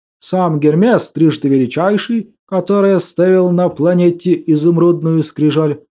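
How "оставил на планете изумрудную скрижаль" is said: ordinary delivery, nothing marked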